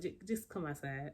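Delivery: ordinary talk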